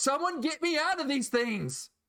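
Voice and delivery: shouting. Voicing Tralus as she sees Mon going back: yelling.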